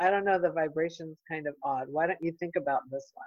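ordinary talk

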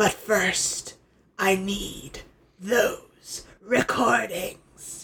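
mock hushed, quiet, seething, intense angry speech. Recapping an episode, acting out Hordak's speech: Hordak's put-on quiet, intense anger. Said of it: "a little quiet, intense, angry man speech".

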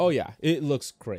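mocking, sarcastic tone. Chatting about a movie theater, sounding sarcastic. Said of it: "You sound really sarcastic right now".

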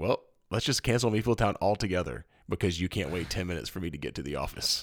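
ordinary delivery

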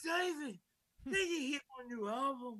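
high, slow drawl rising then dropping. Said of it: "he's like".

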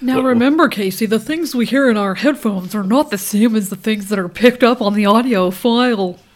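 very loud, obnoxious, lecturing know-it-all voice. Scolding herself about headphone audio while imitating the other speaker. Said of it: "That was me mimicking you".

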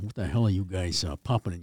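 thick put-on Boston accent. Recalling a coach pulling the players aside and questioning them: heavy Boston accent. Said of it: "that heavy Boston accent".

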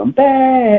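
light, very high-pitched hollered shout. Recounting a player scoring a touchdown, retelling Cam's holler. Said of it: "He hollers".

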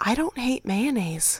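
soft, secretive half-whispered voice. Sharing the last of three things learned down here, half-whispering. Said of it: "That's why I had to whisper it".

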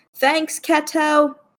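high-pitched, loud, drawn-out yell.

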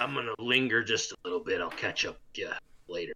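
hushed, half-whispered aside. Half-whispering in character to Kozlo, lingering behind: half-whispering. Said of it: "I whisper to Kozlo".

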